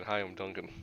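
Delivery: very quiet, low mumble. Voicing a character who won't look anyone in the face: mumbling. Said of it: "He just mumbles in".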